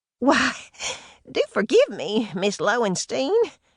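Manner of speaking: breathless gasp. Reading a novel aloud, a character apologizes to a visitor: gasping. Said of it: "Ruby Bee gasped".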